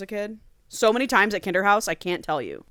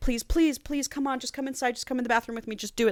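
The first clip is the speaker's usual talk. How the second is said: high, desperate, pleading, coaxing begging; 5 semitones higher, 5 dB quieter than usual. Retelling a story where one character drags another inside: imitating someone begging. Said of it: "just begging her to do it".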